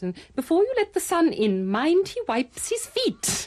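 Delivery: very high, swooping, sing-song, heavily sarcastic voice. Wife imitating her husband quoting at her when he comes in from shooting, mock-sarcastic. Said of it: "he sort of says in an awful sarcastic voice".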